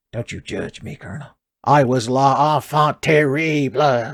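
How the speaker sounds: gravelly and gruff, ground out. A streamer answering the Colonel in a bit, bad Solid Snake impression. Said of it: "doing a bad Solid Snake impression".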